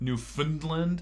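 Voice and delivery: "Newfoundland" with stress on middle syllable "found". Discussing how to say the place name, stress on middle syllable of Newfoundland. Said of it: "the emphasis is on the middle syllable".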